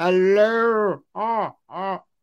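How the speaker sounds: put-on affected, phony Mid-Atlantic accent, drawn-out hello. Retelling how Roscoe Lee Browne greeted people at a bar: phony Mid-Atlantic accent. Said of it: "biggest phony you ever met".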